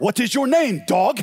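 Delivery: put-on heavy, laid-on Ukrainian accent. Retelling what a man said to a woman, in a thick Ukrainian accent. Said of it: "you gotta imagine it in the thick Ukrainian accent".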